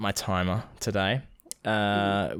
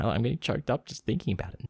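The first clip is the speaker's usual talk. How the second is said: normal talking voice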